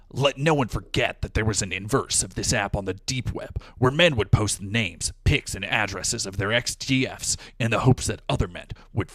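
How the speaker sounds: slithery serpent voice, hissed s sounds. Reading a viewer's ten-dollar donation message in a snake voice. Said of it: "I'm gonna do my snake voice".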